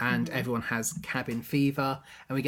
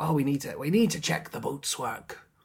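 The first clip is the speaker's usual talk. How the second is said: put-on pirate voice. Discussing the story, the speaker acts out Long John Silver's words: Long John Silver pirate voice. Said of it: "He doesn't use this voice".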